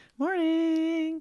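timid, very high, small tentative voice. Showing how they say good morning to strangers, imitating their own high tentative greeting. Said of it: "your voice gets really high and tentative".

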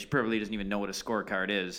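mimicked muttered aside. Retelling muttering to a companion after being told to find scorecards: retold muttering. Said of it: "we kind of both muttered to each other".

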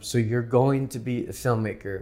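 usual speaking voice

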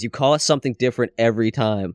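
normal talking voice

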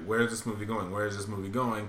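ordinary talk

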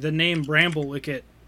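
normal talking voice

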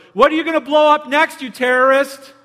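loud, high, taunting yell. Retelling what a man at a picnic table yelled at a passing woman: imitating someone yelling. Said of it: "he yelled out to her".

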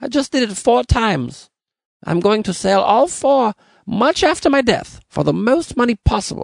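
very high, wavering, unsteady put-on German accent. Voicing the guy who redid the painting four times: wavering fake German accent. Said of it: "This accent's wavering".

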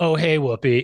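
put-on slightly dismissive character voice. Retelling a scene where Whoopi Goldberg greets him: imitating Pee-wee Herman being slightly dismissive. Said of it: "The way he was just slightly dismissive".

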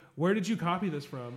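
put-on passive-aggressive delivery. Retelling a reader's question about a copied story: imitating a passive-aggressive question. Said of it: "the most, like, passive aggressive".

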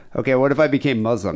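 ordinary delivery

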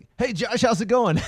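very high, forced, fake-cheery radio-show chatter. Mocking radio shows with forced laughter: imitating fake cheery radio banter. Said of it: "radio shows you hear now where it's like".

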